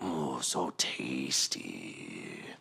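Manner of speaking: low, hushed, creepy monster half-whisper. Narrator voicing a fanged creature as it drains the player's life, half-whispering. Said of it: "its voice whispering in your head".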